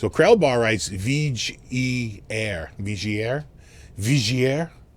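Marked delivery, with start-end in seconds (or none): 2.8-4.7 put-on French accent. Repeating a written phrase aloud, joking: French accent. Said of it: "That's my French accent".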